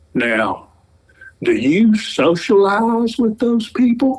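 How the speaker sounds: put-on high, heavy Southern accent with R dropped. Retelling what the gentleman selling car insurance asked: southern accent without hard r. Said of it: "Very Southern accent".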